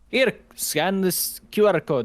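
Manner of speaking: horrible fake Japanese accent, spoken very slowly. Quoting people in Japan who had no English menus: horrible fake Japanese accent. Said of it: "that was my horrible, worst Japanese accent ever".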